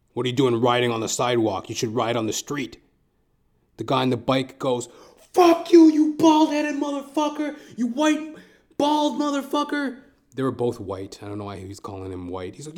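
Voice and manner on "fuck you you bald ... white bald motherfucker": very high, loud, shrill put-on screaming. Retelling a cyclist's reply to a man scolding him, retelling a scream. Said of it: "he's screaming at him".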